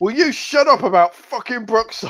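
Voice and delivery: put-on annoyed yelling. Speaker repeating what their partner shouted from downstairs, imitating Kerry's annoyed Ulster Scots shout. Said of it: "a really annoyed Ulster Scots voice shout".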